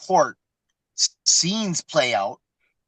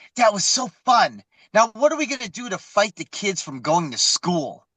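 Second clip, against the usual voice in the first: bubbly, giddy, gushing excitement with raised pitch; 5 semitones higher than usual. Retelling a courtroom scene, quoting a woman there: imitating someone excited. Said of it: "she's all excited".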